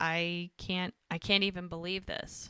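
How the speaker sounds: mock near-tearful voice, about to cry. Retelling a scene where she sees the redone cabin: imitating someone about to cry. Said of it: "almost like she's gonna cry".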